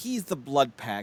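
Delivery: ordinary talk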